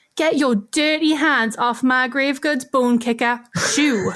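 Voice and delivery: put-on ghost voice with a very broad northern English accent. Game narrator voices a ghost that appears and speaks to the player: northern accent ghost voice. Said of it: "it has a very northern accent".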